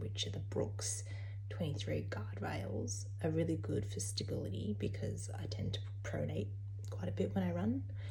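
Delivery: soft, unvoiced whisper.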